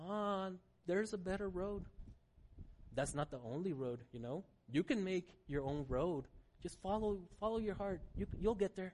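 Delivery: hushed, soft, luring serpent voice. Speaking to listeners, voicing what the serpent says to us: serpent's voice. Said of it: "voices like the serpent's voice saying".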